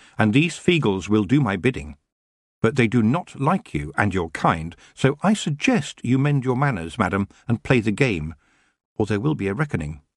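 plain

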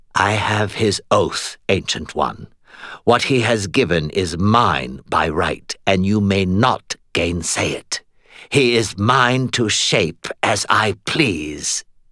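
ordinary delivery

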